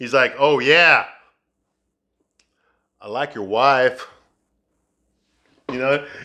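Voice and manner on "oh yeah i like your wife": drawn-out, slow, goading, mocking taunt. Retelling a movie scene where JD taunts the husband: imitating JD taunting. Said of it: "And he taunts him".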